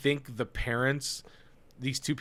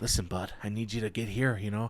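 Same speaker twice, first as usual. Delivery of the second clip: low, soft, coaxing voice; 4 semitones lower, 5 dB quieter than usual. Retelling a stranger crouched low, talking like a baseball dad: imitating a baseball dad coaching. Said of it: "that's how that guy was talking".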